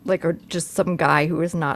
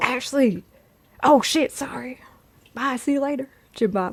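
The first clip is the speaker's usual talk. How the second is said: put-on ghostly, high, slow, drawn-out country drawl; 8 semitones higher than usual. Imagining a friendly ghost waking someone up: Jim Bob country ghost voice. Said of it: "'cause he talks like this".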